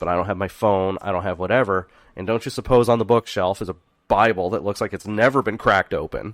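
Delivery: ordinary delivery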